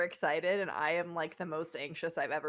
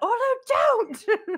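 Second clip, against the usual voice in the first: shrill, very high, very loud cry of alarm; 12 dB louder than usual. A player's character sees a companion start sprinting off, yelling in alarm. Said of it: "Like I'm just gonna yell".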